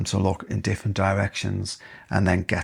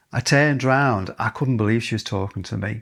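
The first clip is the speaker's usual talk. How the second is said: plain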